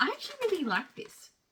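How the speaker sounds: high-pitched, caught-off-guard surprise. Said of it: "Don't know why I sound so surprised".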